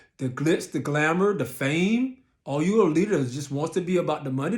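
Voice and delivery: ordinary talk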